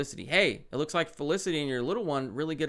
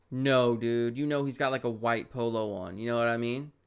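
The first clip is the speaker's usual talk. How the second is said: usual speaking voice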